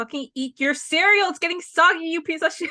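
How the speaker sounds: mock screaming, high-pitched, mild yell. Retelling own reaction while watching a scene: retelling own screaming at the screen. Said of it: "I was screaming and crying".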